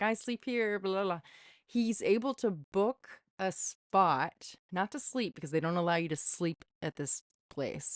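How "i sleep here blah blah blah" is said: fake Turkish accent with raised pitch. Retelling how James O'Keefe booked a spot at a church: fake Turkish accent. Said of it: "this fake accent as, like, a Turkish person".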